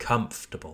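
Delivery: first syllable COM stressed in comfortable. Showing learners the right stress in a word: stress on first syllable COM. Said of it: "we place emphasis on the first syllable".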